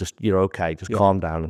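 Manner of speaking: ordinary talk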